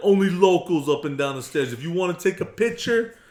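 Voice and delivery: put-on loud surfer voice with New York accent. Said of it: "made the Los Angeles hippie guy sound New Yorker".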